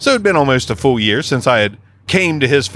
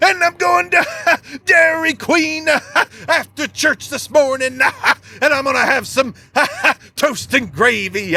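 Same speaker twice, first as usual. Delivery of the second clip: very high, throat-straining, halting preacher-style rant; 13 semitones higher than usual. Describing how someone talks, the speaker mimics them in a throat-straining put-on voice. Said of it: "I'm going to hurt my throat doing that".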